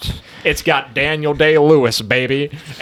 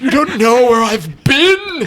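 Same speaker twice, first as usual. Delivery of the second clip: intense put-on actor voice, higher than normal; 9 semitones higher than usual. Acting out a movie scene, intense actor impression. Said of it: "you got the Day Lewis impression down pretty good".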